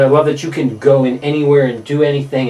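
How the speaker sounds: ordinary talk, nothing marked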